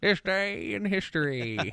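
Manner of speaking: put-on high, very slow, drawn-out old-timer voice. Recalling an old segment intro, doing a put-on old timer's voice. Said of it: "I would do an old timer's voice".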